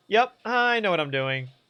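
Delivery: ordinary delivery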